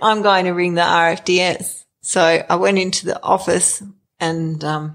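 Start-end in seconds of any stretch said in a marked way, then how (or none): none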